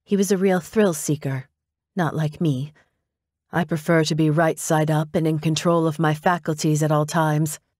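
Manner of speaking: ordinary delivery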